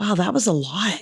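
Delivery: whispered. Retelling what was whispered to the person next to them: retelling own whisper. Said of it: "I whispered to the person next to me".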